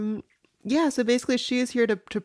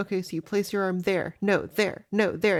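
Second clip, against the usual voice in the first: mock condescending tone; 2 semitones lower than usual. Retelling how a wrestler shows her the hold: imitating a condescending tone. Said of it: "a little condescending to her".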